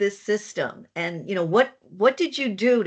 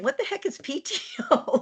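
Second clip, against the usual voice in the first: put-on, pitched very high, half-yelled; 11 semitones higher, 3 dB quieter than usual. Retelling a question to an employee: imitating someone yelling. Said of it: "I'm yelling at her going".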